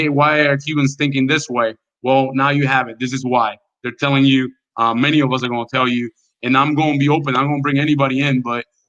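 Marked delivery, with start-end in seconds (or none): none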